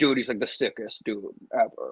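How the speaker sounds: breathy, whispered dude voice. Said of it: "the Jesse Cannon voice".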